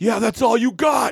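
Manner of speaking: mock shrill scream, pitched very high. Recounting a man a few seats away yelling out, imitating a heckler screaming out. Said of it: "this guy just screams out".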